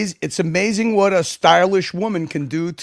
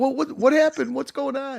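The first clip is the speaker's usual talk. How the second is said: high, bewildered puppy voice, lost and baffled; 8 semitones higher, 3 dB quieter than usual. Retelling how a friend looked during the stream: imitating Timmy like a puppy at the vet. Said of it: "Timmy looked like a, like a puppy at the vet".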